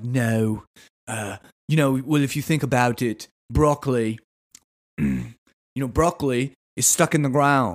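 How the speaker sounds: put-on British accent. Retelling a conversation, quoting Bear Grylls in a bad British accent. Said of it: "how my accent just devolves".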